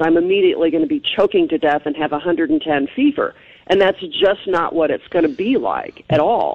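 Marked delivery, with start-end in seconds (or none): none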